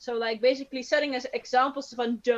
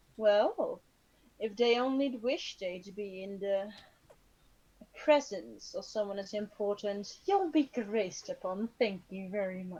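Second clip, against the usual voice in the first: regal, royal air, much quieter; 2 semitones lower, 4 dB quieter than usual. Speaking as Rayla to those who stayed, with a haughty royal air. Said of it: "royal air, like like bitch, I'm a female drow".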